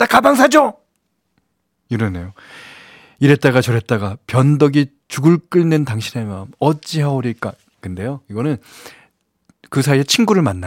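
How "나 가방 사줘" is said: sudden, high, loud angry voice. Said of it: "갑자기 성질을 내면서".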